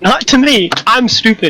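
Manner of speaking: speaking much too loudly. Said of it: "everything I say sounds like I'm yelling".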